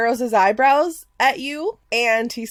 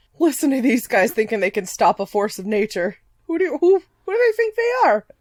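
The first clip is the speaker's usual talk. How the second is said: doubtful grumbling under the breath. Game master voicing a skeptical guard to the players, muttering. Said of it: "he kind of mutters".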